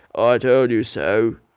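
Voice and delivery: rude, impolite, loud and slow delivery. Narrator reads Gordon speaking to Edward after Edward fails to pull the train, rude. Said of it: "said Gordon rudely".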